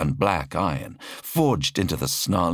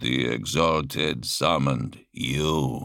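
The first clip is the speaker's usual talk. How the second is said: deep, low, mechanical, machine-like drawl; 4 semitones lower than usual. Narrating fiction, Malak in Terminator plate speaks to the Prophet: Malak's deep mechanical drawl. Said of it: "the voice drawled deep and mechanical".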